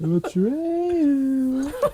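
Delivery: high, drawn-out wailing call.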